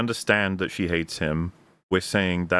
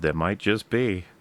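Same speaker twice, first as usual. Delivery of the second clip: mock knowing, self-satisfied, borderline smug tone. Retelling a character's reply in a film: imitating a borderline smug tone. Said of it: "in a kind of borderline smug way".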